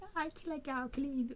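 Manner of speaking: put-on high, squealing girly voice, screaming.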